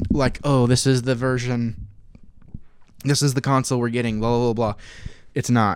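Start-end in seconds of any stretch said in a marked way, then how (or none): none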